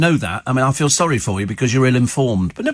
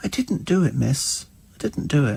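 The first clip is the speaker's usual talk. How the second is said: mock-plaintive kid voice, quieter and slower; 6 dB quieter than usual. Acting out his reply to the teacher, imitating Thomas's little plaintive voice. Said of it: "he's got this little plaintive voice".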